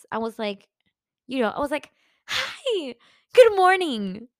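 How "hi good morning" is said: very excited, high, loud, cheerful sing-song voice. Retelling greeting a new neighbor in the hallway: imitating own cheerful greeting. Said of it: "I greeted my neighbor like we were best friends".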